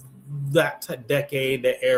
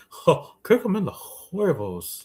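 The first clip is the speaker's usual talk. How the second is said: put-on Texan voice, higher; 5 semitones higher than usual. Repeating a line after being told it sounded like Hank Hill: Hank Hill voice. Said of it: "Said it like Hank Hill".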